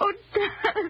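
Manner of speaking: high, sobbing cry. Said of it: "Mary, please stop crying".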